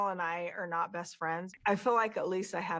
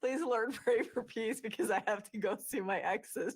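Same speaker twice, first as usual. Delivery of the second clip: sarcastic, mocking, put-on fake-pious praying voice; 4 semitones higher than usual. Mocking two people praying in their car: mocking prayer. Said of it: "she's mocking them about praying in their car".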